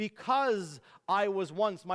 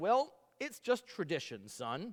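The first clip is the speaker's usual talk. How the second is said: ordinary talk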